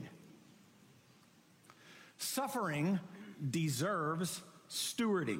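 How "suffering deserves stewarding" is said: slow, stewarding stressed, long pause after suffering.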